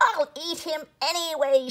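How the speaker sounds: screaming witch voice. Narrating Hansel and Gretel as the impatient witch speaks: screaming at Gretel. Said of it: "she screamed at Gretel".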